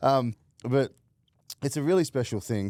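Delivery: choked up, fighting tears. Thanking the other speaker for their charity work, holding back tears. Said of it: "I'm trying not to cry".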